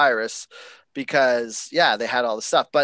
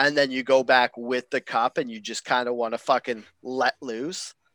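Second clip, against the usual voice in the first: ordinary delivery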